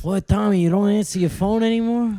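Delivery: gangster voice. After mentioning his voicemail, doing a Tony Darrow impression. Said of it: "pretty good impression".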